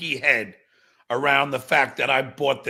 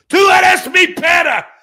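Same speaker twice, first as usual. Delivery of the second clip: shouting, higher and louder; 12 dB louder than usual. Playing an angry rant about a hypocrite, yelling. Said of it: "when somebody yells and then coughs".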